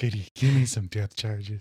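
put-on sly drawling voice. Asked to do a captain as Jack Nicholson: Jack Nicholson impression. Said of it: "You do it".

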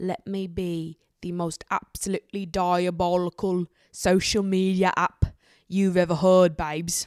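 bad, failing fake British accent, drawn out. Voicing TikTok as if the app were speaking, in a bad British accent. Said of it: "My British accent is failing me again".

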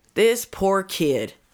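pleading, sympathetic appeal for pity. Imitating a defense attorney addressing the jury: imitating a defense attorney. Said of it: "he's like".

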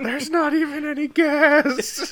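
shrill, very high, loud, drawn-out screaming. Retelling a movie scene after a car catches fire: imitating someone screaming. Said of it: "screaming that".

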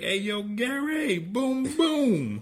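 put-on very high, loud, drawn-out New York Italian accent. Showing how he calls out a guy who got roasted, in a new york italian accent. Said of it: "I call him out in a New York Italian accent".

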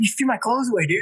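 mock frantic, high, rushed freak-out. Retelling what a friend said: imitating someone freaking out. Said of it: "he was, like, freaking out".

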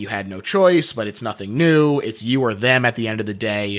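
usual speaking voice

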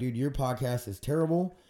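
ordinary talk

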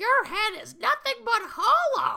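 very high, loud, taunting put-on kid voice. Retelling how a kid on the show taunts another kid: imitating a kid's great voice. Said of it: "one kid does this great voice".

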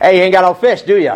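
high, sassy, wisecracking, snarky New York attitude. Retelling a teasing question from the shore: snarky, with attitude. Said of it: "It comes with a little bit of attitude".

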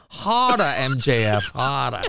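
very slow, drawn-out, deliberate, mocking Boston accent. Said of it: "here's an imitation of your mother's".

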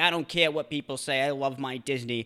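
put-on commercial-style woman's voice with Boston accent. Retelling a lady in a Disney commercial, in a Boston accent. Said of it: "this lady with like a Boston accent".

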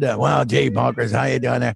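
low, rough cartoon cop voice. Recalling being asked to voice Lucky Piquel opposite Bonkers: Lucky Piquel voice. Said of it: "do the voice of Lucky Pickell".

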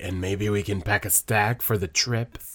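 dead-serious, very low, deep voice. Retelling what a woman in a scene said, imitating her deep, serious voice. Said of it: "in her, like, deep, serious voice".

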